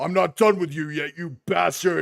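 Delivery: big, loud booming yell, pitched high. A game master voices a creature charging from behind, loud booming yell. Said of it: "a loud booming voice yell".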